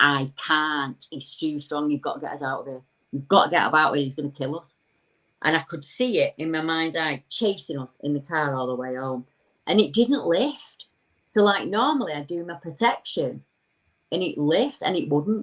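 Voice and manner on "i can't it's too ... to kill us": usual speaking voice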